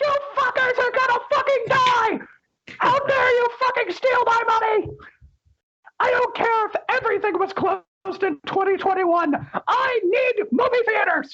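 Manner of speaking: squeaky, evil voice pitched way up. Demonstrating a second, evil version of the cartoon mouse voice: evil Mickey Mouse voice. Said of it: "a Mickey Mouse voice where it's like".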